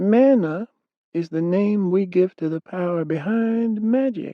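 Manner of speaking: faint, weak, very high-pitched voice. In a fantasy tale, a warlock answers a question in a weak, high voice. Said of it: "The warlock's voice had gone weak and high".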